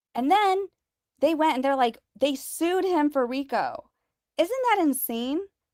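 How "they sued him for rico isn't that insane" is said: slow, worked-up, incredulous outburst. Telling how the victim was sued for RICO: raised voice. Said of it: "Sorry if I'm raising my voice".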